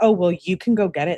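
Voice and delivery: plain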